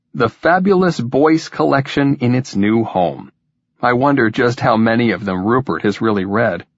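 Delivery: ordinary delivery, nothing marked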